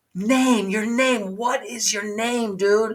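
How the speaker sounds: imitated whispering. Retelling asking a musician his name on stage: retelling a whisper. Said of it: "I'm trying to whisper".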